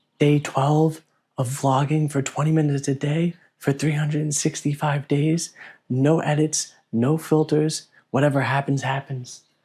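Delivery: hushed whisper. Vlogger opens a daily video while Everly is sleeping: whispering. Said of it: "I'm whispering because Everly's sleeping".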